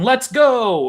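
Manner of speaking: put-on very high, loud rallying war cry. Retelling a film scene before a battle charge: imitating Odysseus yelling. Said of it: "he's yelling".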